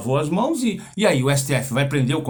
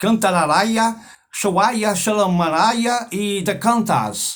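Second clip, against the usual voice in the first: shouting made-up nonsense syllables, pitched up; 7 semitones higher, 3 dB louder than usual. Retelling a celebration, imitating Michelle Bolsonaro shouting. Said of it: "Ela gritou".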